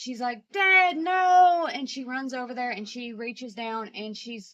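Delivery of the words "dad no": put-on extreme hysteria, shrill, very high, loud cry. Telling how their sister freaked out over their dad, imitating sister's hysterical outburst. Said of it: "like extreme hysteria".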